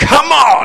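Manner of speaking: excited shout, high-pitched and loud.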